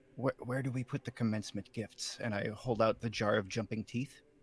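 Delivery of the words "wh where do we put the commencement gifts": soft, hesitant stage whisper. Playing a character, the speaker asks someone nearby a question, whispering. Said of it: "whisper to them".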